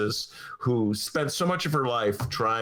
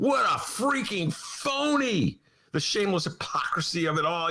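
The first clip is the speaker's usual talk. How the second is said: furious, full-rage ranting; 10 semitones higher than usual. Reacting to the plan to vote on a replacement: full rage. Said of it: "Now I'm in full rage and glory".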